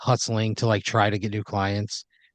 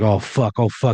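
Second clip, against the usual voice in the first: put-on panicked, freaking-out outburst. Retelling how a man who hit someone reacted: imitating someone freaking out. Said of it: "And he's freaking out".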